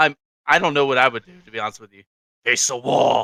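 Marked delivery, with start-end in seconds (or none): 2.4-3.3 put-on voice of a demon. Acting out a command someone might hear in their sleep, in a demonic voice. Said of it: "in the same demonic voice".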